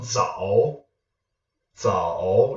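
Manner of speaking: 早 dips down and back up, falling-rising third tone. Teaching mandarin tones, showing the voice dipping down then up. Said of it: "Do you hear my voice going down and back up?".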